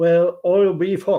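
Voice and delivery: Newfoundland accent. Explaining a newfoundland phrase, the speaker tries it again in a newfoundland accent. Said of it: "now I can't even say it the proper way".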